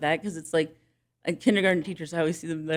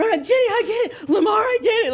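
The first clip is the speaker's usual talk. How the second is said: eager, thrilled, excited, raised exclamation; 7 dB louder than usual. Recounting how a student jumped up and threw his notebook down, imitating someone excited. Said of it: "he's all excited".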